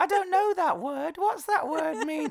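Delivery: put-on very high baby voice.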